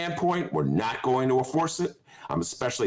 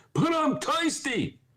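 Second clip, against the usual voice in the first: put-on very high-pitched old man voice. Doing a bit from Coming to America, Eddie Murphy old-man imitation. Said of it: "That's my Eddie Murphy, old man in the barbershop imitation".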